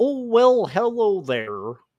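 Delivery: unhurried frog-puppet register. Demonstrate the vocal register you are closer to, in a Kermit the Frog voice. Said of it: "Kermit line of, uh of the vocal register".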